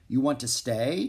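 ordinary delivery

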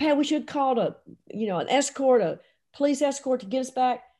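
frantic, urgent, panicked half-shout. Retelling driving a woman in labor to the airport: imitating someone yelling and screaming. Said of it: "I'm yelling and screaming and banging on the steering wheel going".

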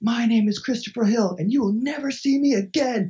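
high, loud, full-throated top-of-the-lungs shriek. Retelling a man on the trail who stopped and screamed, imitating Christopher Hill's scream. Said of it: "he screams at the top of his voice".

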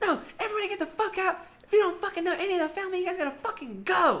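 mock shrill scream, very high-pitched. Retelling being told to leave a party: imitating someone screaming. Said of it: "we're getting screamed at".

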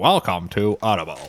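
low, synthetic, robotic digital narrator voice. Describing an audiobook's narration, imitating its Audible digital voice. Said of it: "it has that just digital voice".

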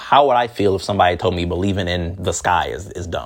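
ordinary talk, nothing marked

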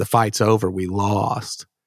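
ordinary talk, nothing marked

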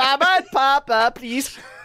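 high, laid-on put-on Swedish child accent. Imitating Swedish kids from earlier today, in a put-on Swedish accent. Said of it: "is this an accurate Swedish accent we're doing?".

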